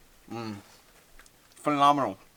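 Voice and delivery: speaking with a full mouth. Tasting baked beans at an outdoor kitchen, the speaker talks with a full mouth. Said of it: "I shouldn't talk my mouth full".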